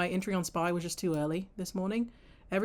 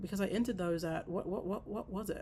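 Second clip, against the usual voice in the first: stuttering, stammering, tripping over words; 7 dB quieter than usual. Recalling when they bought the contracts, stuttering. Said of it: "now I'm stuttering".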